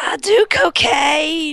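put-on southern hillbilly accent. Joking about a cocaine-loving clown; Dr. Roxo voice, southern hillbilly. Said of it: "You sound like a southern hillbilly".

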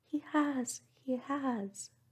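loud, high, eager cry, very slow and drawn out. Narrator reading a character's reply after being told she is mistaken, crying out. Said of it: "cried Marianne".

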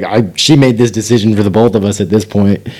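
ordinary delivery

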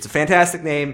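ordinary delivery

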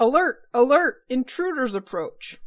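loud, booming alarm-style announcement voice. Voicing a Dwarven device sounding an alert about intruders, booming alarm voice. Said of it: "what that booming voice said".

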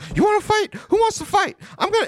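voice jumping up to very high pitch. Act out a man asking who wants to fight, imitating a voice going super high. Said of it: "his voice started going super high".

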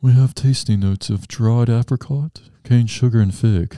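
affected, put-on snobby snooty voice. Reading coffee tasting notes aloud, in a snobby voice. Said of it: "Let me get my snobby voice on".

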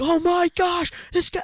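very high, loud, screaming sports-commentator voice. Describing a man who acts like a college sports commentator; imitating screaming sports commentator. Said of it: "like screaming into the TV".

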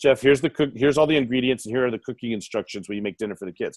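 ordinary talk, nothing marked

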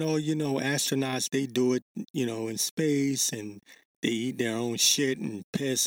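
ordinary delivery

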